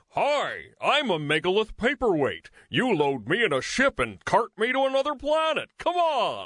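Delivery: goofy high voice with big pitch swoops. On a board game podcast, voicing a game piece to explain the game, silly game-piece voice. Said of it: "do the silly voices to explain the game".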